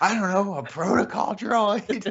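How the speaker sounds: shrill, very high indignant huff, acted out. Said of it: "the indignation in your voice".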